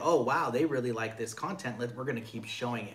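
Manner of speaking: plain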